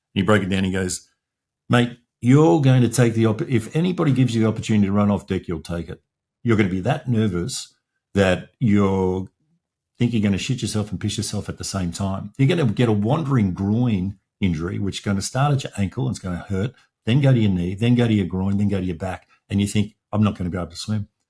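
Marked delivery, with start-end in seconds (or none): none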